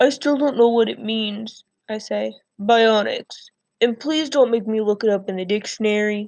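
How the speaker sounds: plain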